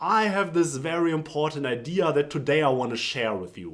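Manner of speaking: pitch falling, landing on final word "you". Advice to end every sentence with pitch going down: pitch falling at sentence end. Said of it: "At the end of every sentence, go down with your pitch".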